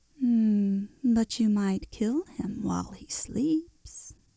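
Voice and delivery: quiet, soft, hushed cat voice. Narrator reading the cat's suggestion to Dorothy and the bear, soft cat voice. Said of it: "suggested the cat in a soft voice".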